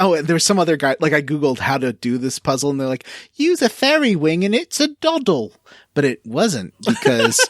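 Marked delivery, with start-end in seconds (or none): 3.4-5.5 very high-pitched, put-on Cockney accent. Quoting an online guide about a puzzle, in a Cockney accent. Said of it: "why is that a Cockney accent?".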